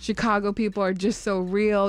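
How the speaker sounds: usual speaking voice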